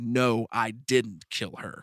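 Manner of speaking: low, slow, angry, right on the verge of crying. Showing how the actor should answer the Emperor in that scene: low, angry, near tears. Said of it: "in just a low, just mad, but on the verge of crying tone".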